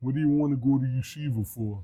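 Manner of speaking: put-on very soft, low, deep, hushed New York accent. Retelling what a man in Israel said to him: deep New York accent. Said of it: "Deep New York accent".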